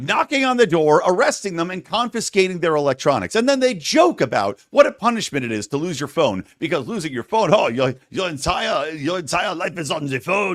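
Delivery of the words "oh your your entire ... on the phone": terrible, bad fake French accent. Mocking police who take people's phones, in a terrible French-sounding accent. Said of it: "That was a terrible accent".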